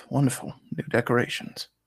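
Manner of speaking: muttered under breath. Voicing a character just given a permanent scar by a claw slash, muttered under breath. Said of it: "I just mutter under my breath".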